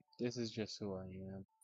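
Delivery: flat, hushed, very quiet, unexcited character voice. Voicing the person at the door answering newcomers: unenthused in-character voice. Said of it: "it's the character's talking voice".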